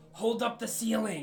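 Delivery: put-on shrill, ear-splitting, very high, very loud scream. Playing a character who yells at an ally bracing the ceiling: screaming in character. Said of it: "Gax will scream".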